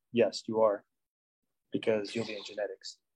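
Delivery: low, hushed, dark and foreboding ominous voice. Speaker answering an imagined student's question about being in genetics, ominously. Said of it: "He says ominously".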